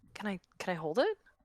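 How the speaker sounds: hushed, very quiet, fighting off tears. Retelling how someone asked to hold it: very quiet. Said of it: "very quietly like".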